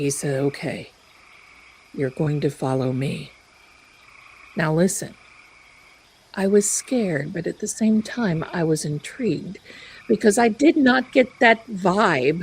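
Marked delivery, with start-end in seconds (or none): 0.4-3.3 low droning monotone, much lower pitch. Retelling the words of a man standing by the table, in a low droning monotone. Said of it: "this low monotone voice that he speaks".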